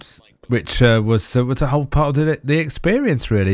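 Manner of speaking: usual speaking voice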